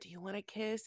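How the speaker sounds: mock whispering. Retelling what a man said in a woman's ear, imitating a whisper. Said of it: "he's like whispering in her ear".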